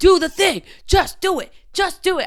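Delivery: aggressive, pushy yell, high and loud.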